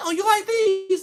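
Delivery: high, loud, proud, showing-off woman's voice.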